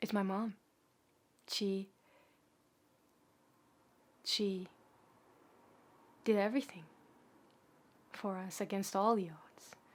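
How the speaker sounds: teary-eyed, emotional voice. Speaking about their mom, teary-eyed. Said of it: "I think I'm getting teary-eyed".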